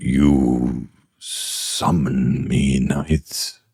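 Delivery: speaking in a dark voice. Retelling what the being that gazes upon you says, in a dark voice. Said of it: "says in a dark, in a voice".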